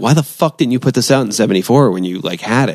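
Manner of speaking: ordinary talk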